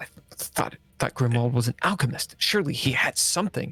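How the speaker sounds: muttering and mumbling under the breath. Voicing a character rifling through cabinets: muttering under his breath. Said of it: "muttering under his breath".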